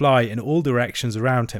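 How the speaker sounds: ordinary delivery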